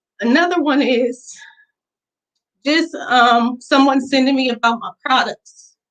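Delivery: teary voice, fighting off crying. Reading out supportive messages, holding back tears. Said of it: "I'm trying not to cry".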